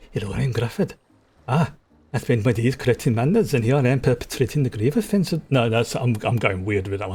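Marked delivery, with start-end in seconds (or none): 0.2-5.4 put-on, slightly bad, rough Welsh accent. Going into character as Grufford, slightly bad Welsh accent. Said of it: "they're all going to have a slightly bad Welsh accent".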